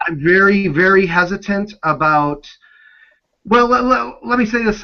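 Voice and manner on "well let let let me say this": pitched-up stammer repeating "let". After a long day, a speaker starts to make their point, stuttering. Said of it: "I apologize for my uh, stuttering".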